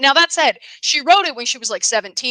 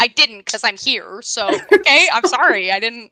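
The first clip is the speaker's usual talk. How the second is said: usual speaking voice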